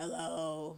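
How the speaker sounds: put-on poor-sounding voice. Retelling waking up the day after smoking hookah: imitating own voice sounding bad. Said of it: "my voice was like".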